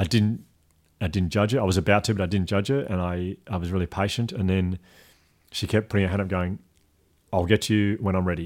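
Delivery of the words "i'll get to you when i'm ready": curt, stern, abrupt, short dismissive delivery. Retelling what a worker said while raising her hand: imitating a stern, abrupt reply. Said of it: "a very stern and very abrupt kind of".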